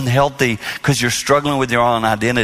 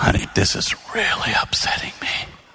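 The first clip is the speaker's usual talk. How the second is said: very soft, hushed, near-whispered voice; 5 dB quieter than usual. Retelling a talk with Jane, the speaker says it to her very soft. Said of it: "say it really soft".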